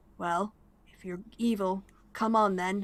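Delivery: growled, rumbling voice. Voicing a fearful gargoyle lurking in a cell: low growl. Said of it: "saying to you in a low growl".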